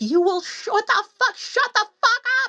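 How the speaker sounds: shrill screeching scream, pitched very high. Recounting screaming at a man to his face, retelling a scream. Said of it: "I screamed at this man".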